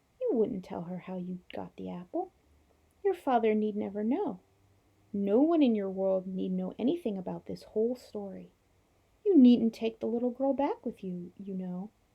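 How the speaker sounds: speaking sweetly. Narrator reading the witch's lines, speaking sweetly. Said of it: "speaking more sweetly than you would have thought".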